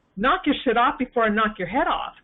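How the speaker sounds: ordinary talk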